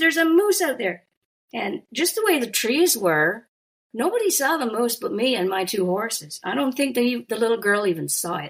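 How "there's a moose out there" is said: high-pitched, alarmed shout. Retelling seeing a moose while riding: retelling own shout. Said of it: "And I shouted".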